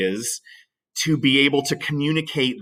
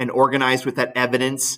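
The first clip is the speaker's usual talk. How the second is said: usual speaking voice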